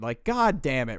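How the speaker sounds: usual speaking voice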